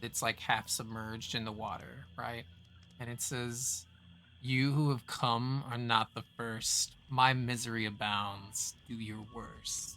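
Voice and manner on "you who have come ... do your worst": echoing voice, as if ringing from a cavern. Describing a voice coming from a half-submerged cave: echoing voice from a cave. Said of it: "hear this echoing voice".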